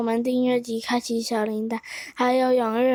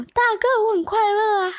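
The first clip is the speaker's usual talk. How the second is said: put-on, very high hollering shout; 9 semitones higher than usual. Telling a joke, voicing a rider who turns back to answer: shouting back in character. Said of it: "关羽就回头大喊说".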